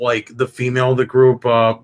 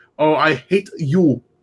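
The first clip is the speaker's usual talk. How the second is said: angry, slow, put-on Indian accent slipping in; 4 semitones higher than usual. Imagining someone getting mad, imitating an indian accent. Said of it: "the Indian accent just slips in".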